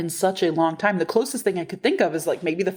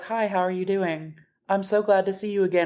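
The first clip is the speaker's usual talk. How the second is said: mock-tired, road-weary put-on voice. Retelling how they greeted people on arriving, imitating a weary greeting. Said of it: "we were so road weary".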